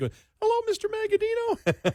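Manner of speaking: put-on very high unbroken boy's voice, sing-song. Reenacting a phone call he made before puberty: raised pre-puberty voice. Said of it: "so I can raise my voice".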